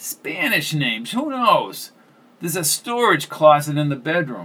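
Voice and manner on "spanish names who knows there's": usual speaking voice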